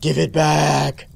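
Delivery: slow, drawn-out, creepy villain voice. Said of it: "greeted by a creepy voice saying".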